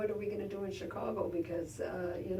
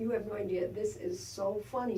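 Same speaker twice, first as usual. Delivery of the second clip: ordinary talk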